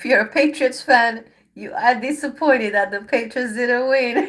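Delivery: speaking through laughter. A tarot reader addresses Pisces about the Patriots' loss, laughing while talking. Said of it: "I'm not laughing like in a bad way".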